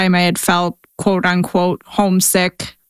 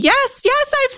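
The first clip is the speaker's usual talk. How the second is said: mock scream, much higher pitch. Retelling a phone call where mom hears about the tornado outbreak: imitating mom screaming. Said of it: "she just starts screaming".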